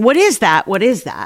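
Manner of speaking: plain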